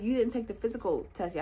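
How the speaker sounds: plain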